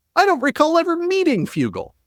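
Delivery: mocking whine, pitched high.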